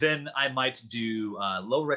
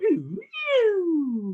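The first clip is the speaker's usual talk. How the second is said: high swooping vocal siren. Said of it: "that siren going".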